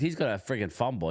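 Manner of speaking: normal talking voice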